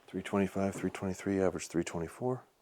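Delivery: very soft, hushed, near-whisper voice. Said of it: "I'm gonna be quiet for the next three arrows or just whisper".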